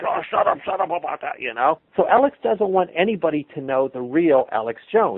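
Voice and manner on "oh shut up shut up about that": mock angry, pissed-off dismissive tone. Retelling a video where a buddy questions Alex Jones: imitating Alex Jones pissed off. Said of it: "Alex gets all pissed off at him".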